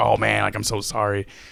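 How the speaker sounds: acted nervous delivery. Retelling the nervous friend apologizing while wiping: imitating a nervous apology. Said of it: "my friend was all nervous".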